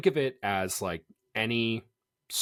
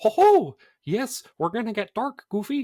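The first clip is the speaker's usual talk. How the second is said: very high, squeaky mock cartoon voice. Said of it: "That was my mini impression".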